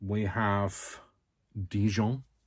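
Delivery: bad French accent on the word Dijon. Naming colors one by one, saying this one in a bad french accent. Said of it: "I have to say it with a French accent".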